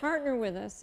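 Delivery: plain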